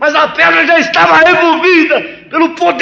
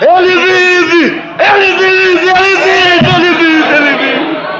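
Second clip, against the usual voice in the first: persistent calling out, each vive stretched; 3 semitones higher than usual. Retelling how a woman ran out shouting, acting out her shout. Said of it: "E ela saiu gritando".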